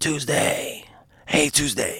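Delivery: put-on raspy male voice. Retelling how Tony greeted the speaker each time, imitating Tony's raspy voice. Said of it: "Tony had this raspy voice".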